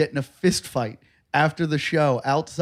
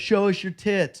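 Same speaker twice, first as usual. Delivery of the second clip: imitated woman's voice, yelling out from a crowd; 5 semitones higher than usual. Retelling a heckler in the crowd, imitating a woman yelling. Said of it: "Some woman yells".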